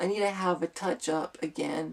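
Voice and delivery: ordinary talk, nothing marked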